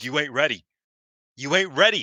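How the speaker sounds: loud, high taunting yell, repeated twice. Recapping a match, retelling a competitor's taunt at her beaten opponent, retelling a yell.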